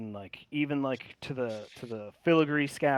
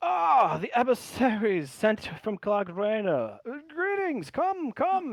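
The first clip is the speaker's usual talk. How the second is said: raised voice, higher and louder; 10 semitones higher, 4 dB louder than usual. Voicing an elf greeting the emissaries across the grand hall: louder voice. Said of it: "he says in a louder voice".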